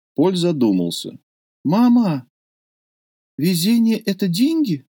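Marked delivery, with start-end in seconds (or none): 1.6-4.8 shy, hesitant, timid voice, raised in pitch. Paul asks his mother a question after she speaks of luck, timid. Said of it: "спросил он робко".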